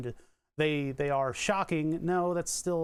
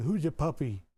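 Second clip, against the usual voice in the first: silly voice for talking to animals. Streamer shows how they talk to their dog, weird voice for the dog. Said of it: "I'll do all the weird voices and stuff to the dog".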